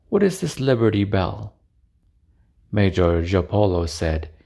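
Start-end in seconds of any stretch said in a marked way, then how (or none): none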